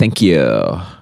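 very low, offhand, dismissive tone. Describing how Gen Zers say thanks, the speaker imitates a dismissive thank-you. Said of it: "it's almost like dismissive".

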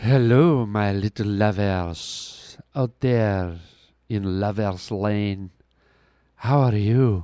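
very low, slow, creepy lovey-dovey romantic voice. A podcast host greets listeners on a Valentine's episode: romantic lovey-dovey voice. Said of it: "I was trying to be all romantic and lovey-dovey".

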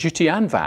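ordinary talk, nothing marked

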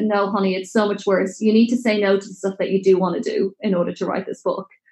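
plain

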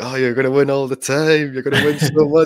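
high, rousing, orator-style speech delivery. Recalling a speech about winning too much: Donald Trump impression. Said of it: "I didn't expect you to pull out a Donald Trump impression".

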